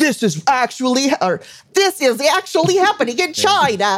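put-on slow, puppet-like Canadian accent. Retelling a post, imitating its author: Jordan Peterson impression. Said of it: "That was not a very good impression".

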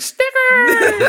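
creepy yelling.

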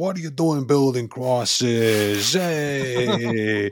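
put-on loud Italian-American accent. Recalling a film, quoting Judas with Harvey Keitel Italian-American shouting. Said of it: "with an Italian-American accent shouting".

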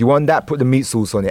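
plain

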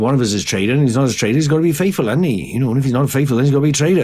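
put-on Welsh accent with revelatory tone of great discovery. Showing another speaker the impression stuck in their head: Andrew from The Traitors impression. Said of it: "He's basically like a Welsh guy".

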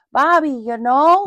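loud, high Midwestern woman's voice. Telling the listener what they just sounded like, doing the Bobby's World mom voice. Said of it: "and his mom's from the Midwest, and she'd go".

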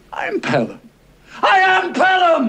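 very slow, very high, shrill, swooping, rising drawn-out shout. A man insists on who he is to someone who won't recognize him, shouting. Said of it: "Don't shout".

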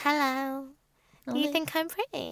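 high, cutesy, put-on baby-talk voice. Imitating how Maura talks around Curtis: baby voice imitating Maura. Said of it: "She does do the baby voice".

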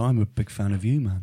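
put-on Liverpool accent voice. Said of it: "Sounds like [name]".

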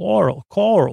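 bad, weak put-on Long Island accent. Giving a Ronkonkoma shout-out, in a bad Long Island accent. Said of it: "That's not a good Long Island accent".

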